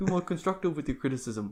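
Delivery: put-on quiet murmured New Zealand accent. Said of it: "a New Zealand one".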